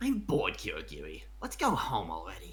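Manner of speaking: very low, deep, sing-song, swooping put-on anime character voice. Showing off the speaker's best impersonation, a character impersonation. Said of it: "my best impersonation is this".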